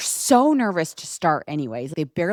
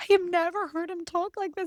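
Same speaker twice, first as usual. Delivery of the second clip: put-on shock, much higher, quieter; 12 semitones higher, 6 dB quieter than usual. Describing a viral video of a teen's mother, imitating a mortified mom.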